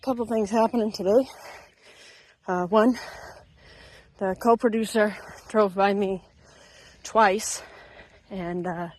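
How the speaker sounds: winded, slightly breathless voice. After a run's cool down, recounting the day, out of breath. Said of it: "a little out of breath".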